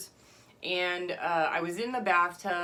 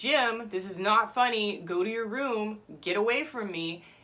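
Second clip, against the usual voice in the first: fed-up, furious, angry, stern tone; 3 semitones higher than usual. Retelling yelling at someone outside the bathroom door: imitating someone yelling angrily. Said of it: "And then I'm like".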